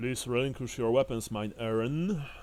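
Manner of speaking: rough, gruff, demanding guard voice. Narrator voicing one of the characters who confront the party, in a gruff voice. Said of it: "in a rather gruff voice".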